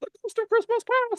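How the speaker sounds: put-on, altered ghost voice. Retelling what the chatbot says when it claims to be a ghost: imitating Ghost of Christmas Past voice. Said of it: "change his voice".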